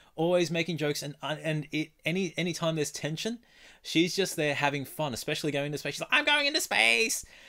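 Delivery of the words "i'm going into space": very high, bubbly cartoon voice. Speaker praising a favorite show character, doing a bad Entrapta impression. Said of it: "That was a terrible voice".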